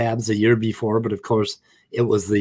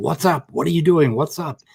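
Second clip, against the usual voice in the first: put-on aggressive, hostile, confrontational, challenging tone; 5 semitones higher than usual. Recounting a man with his hand on his gun confronting him, retelling a yell. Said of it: "starts yelling at me and saying".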